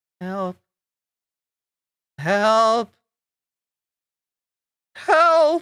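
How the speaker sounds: strange high voice calling out. A game master voices the feminine voice from a player's dream, odd feminine voice crying out. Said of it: "that odd, odd voice crying out".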